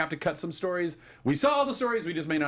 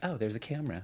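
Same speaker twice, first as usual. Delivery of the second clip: soft, quiet voice with a noticing tone; 2 semitones lower, 7 dB quieter than usual. Recapping a scene to co-hosts, doing a Frank Castle's wife impression. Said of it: "That's my impression of Frank Castle's wife".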